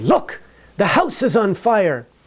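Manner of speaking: animated, excited, high and swooping voice. Speaker explaining English punctuation demonstrates how people sound excited. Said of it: "When people are excited".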